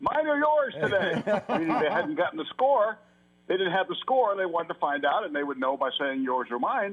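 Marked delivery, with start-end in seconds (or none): 0.0-1.4 high, slow, loud yell. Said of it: "yell to me".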